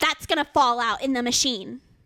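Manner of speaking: ordinary talk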